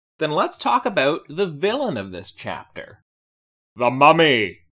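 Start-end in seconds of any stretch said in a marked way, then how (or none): 3.8-4.5 belted out loud, screen style. Announcing the villain of the chapter, imitating Peter Capaldi saying it. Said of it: "It's how Peter Capaldi says it".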